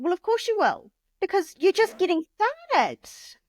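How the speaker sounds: high, knowing, sarcastic, tossed-off delivery. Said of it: "And it's like".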